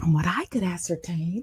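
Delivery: slow, hushed whisper, very quiet, barely audible. Imitating the other speaker recording quietly while someone sleeps nearby: imitating someone whispering. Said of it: "you do those really quietly".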